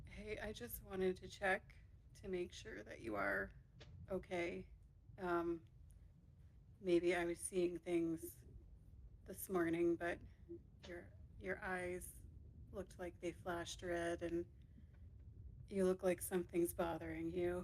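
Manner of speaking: whispering in put-on voice. Speaking in character, quietly checking on a travel companion: whispering in character. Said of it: "Jinx only whispers".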